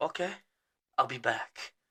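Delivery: weird put-on voice, soft and slow. Retelling a guy's reply at the cash-only counter, in a weird voice. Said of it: "it's just a weird voice".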